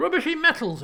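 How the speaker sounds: croaky, gruff, scoffing gnome voice, grumbling. A gnome scoffs at the offered coin, in a gruff croaking voice. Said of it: "gruff croaking of the gnome".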